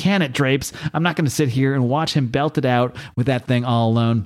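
ordinary talk

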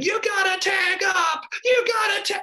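put-on very high, shrill, all-out screaming rant. Recalling losing a kickball game, the speaker re-enacts screaming at a classmate. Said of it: "And I am screaming".

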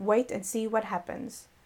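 ordinary delivery, nothing marked

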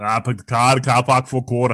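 Massachusetts Boston accent. Asked whether they have a good Boston accent, in a Boston accent. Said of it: "Would you got a good Boston accent?".

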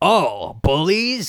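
put-on low, slow, gruff, cranky old man voice. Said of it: "and he's saying".

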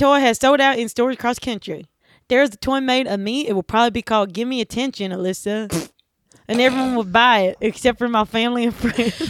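put-on Southern accent with a drawl. Reading out the last joke: put-on Southern drawl. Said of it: "Like a Southern drawl".

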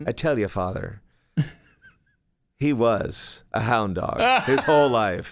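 put-on just a touch of Irish accent. Quoting a woman speaking to the priest, in a slight Irish accent. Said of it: "she had a bit of an Irish accent".

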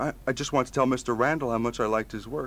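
ordinary delivery, nothing marked

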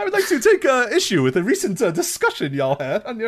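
put-on very high, swooping, sing-song, old-school polite voice. Acting out a formal message sent to the hosts: imitating Jervis Cottonbelly's old-school talk. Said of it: "In his old school language".

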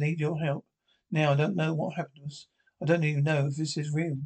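ordinary delivery

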